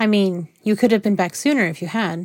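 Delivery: plain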